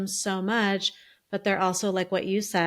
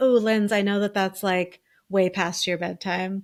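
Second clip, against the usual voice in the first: normal talking voice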